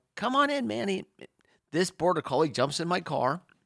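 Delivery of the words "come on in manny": put-on high, raised shouting yell. Retelling calling a dog into the car in pouring rain: retelling own yell. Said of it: "and I yell".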